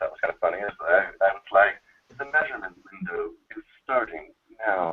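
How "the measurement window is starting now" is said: quiet, robotic announcer voice. Recalling a voice done on Zello that cracked people up: Venture Bros. robot voice. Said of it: "I did do a robot voice on Zello".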